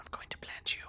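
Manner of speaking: very quiet, breathy, barely voiced whisper. Narrator voicing a figure behind Kethgar, whispering into his ear. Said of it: "she whispers in his ear".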